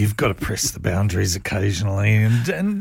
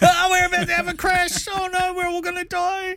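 very high, frantic, panicked delivery. Joking about pilots staying calm, the speaker imagines one on the microphone: mock-panicked pilot announcement. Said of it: "What would you do if they got on the microphone and went".

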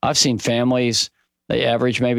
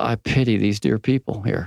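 put-on muttered mumble under the breath; 2 semitones lower than usual. Retelling a remark made while walking past apartments: imitating a mumble under the breath. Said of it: "I just mumbled under my breath".

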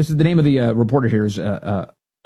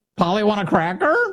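high-pitched parrot voice; 6 semitones higher than usual. Asking why a candidate sounds like a pirate captain's parrot, the speaker imitates a parrot. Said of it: "sound like the parrot".

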